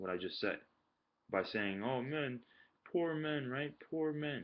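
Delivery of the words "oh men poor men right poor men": belittling sarcasm, high-pitched and drawn out. Retelling how a woman cut in: imitating sarcastic belittling tone. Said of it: "she was being sarcastic and belittling".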